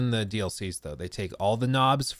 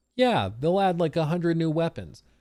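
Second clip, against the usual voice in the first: put-on heavy sarcasm, throwaway delivery; 6 semitones higher than usual. Retelling an earlier guess about a hundred new weapons: imitating own sarcastic remark. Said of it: "I said that sarcastically".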